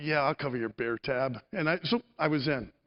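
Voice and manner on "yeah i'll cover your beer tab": low, reluctant, grudging voice with a little sigh. Retelling how he agreed to cover the speaker's beer tab: retelling a little sigh. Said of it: "And with a little sigh".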